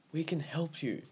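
soft, high, hushed half-whisper. She speaks to a boy who gives no answer, half-whispered. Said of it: "she whispered".

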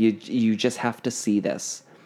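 ordinary talk

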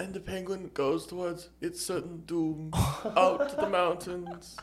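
slow, hushed nature documentary narrator voice. Doing a nature documentary narration about a penguin: David Attenborough impression. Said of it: "That was the most perfect impression I've ever heard".

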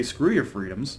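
ordinary talk, nothing marked

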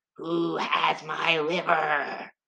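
eerie, very slow, dragged-out spooky ghost voice. Telling a ghost story, the narrator voices the woman in a ghost voice. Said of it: "I'm really enjoying the ghost voice".

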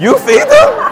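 voice jumps very high, sharply rising pitch. Retelling a question put to the people, in a high-pitched voice. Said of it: "whenever my voice goes high".

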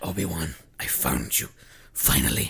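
mock-deranged villain voice. Speaker retelling a showdown scene with Obi-Wan, imitating deranged Maul. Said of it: "He's all like deranged".

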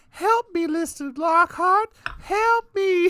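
put-on childlike voice, very high and very loud call. Retelling a movie scene where a child's voice cries out: imitating a young child's voice. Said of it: "a young child's voice being like".

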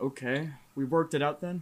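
joyless, cheerless, glum and unhappy tone. A man staying behind alone tells the others the plan is settled: not sounding happy. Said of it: "You don't sound happy".

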